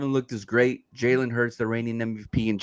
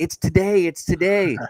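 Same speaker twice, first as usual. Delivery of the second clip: put-on high, drawn-out, overjoyed excited kid voice; 7 semitones higher, 4 dB louder than usual. Imitating the kid from Jerry Maguire waking up: imitating the Jerry Maguire kid, excited. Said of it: "like the kid on Jerry Maguire when he wakes up".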